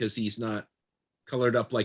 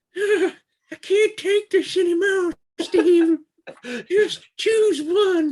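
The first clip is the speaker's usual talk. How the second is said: very high, slow, loud cartoon voice; 8 dB louder than usual. Speaker voicing their wallet talking to Steve, in a Towelie voice. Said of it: "talks like Towley from South Park".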